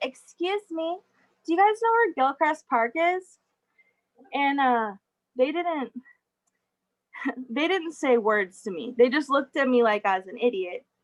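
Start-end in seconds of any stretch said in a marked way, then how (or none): 0.0-3.2 high, over-the-top put-on Valley Girl voice. Asking people standing by the park sign for directions, in a Valley Girl voice. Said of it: "in the most Valley Girl voice I could make".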